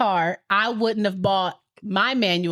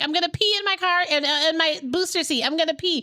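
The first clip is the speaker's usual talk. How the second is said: play-acted, high, frantic, panicky little-kid voice; 8 semitones higher than usual. Retelling a daughter in the booster seat: imitating a panicking child. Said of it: "panicking in the back 'cause she's like".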